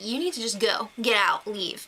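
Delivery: ordinary delivery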